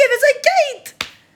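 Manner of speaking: high, slow, tearful crying outburst.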